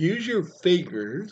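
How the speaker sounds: spoken mid-yawn, very high pitch. Partway through giving advice, then apologizing for a yawn: yawning while talking. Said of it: "sorry, yawn monster".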